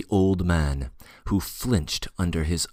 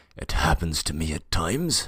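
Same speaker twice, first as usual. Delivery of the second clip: hoarse, ailing, sickly voice. Reading a story aloud, an ill old man apologizing: hoarse, ailing voice. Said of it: "in a hoarse, ailing voice".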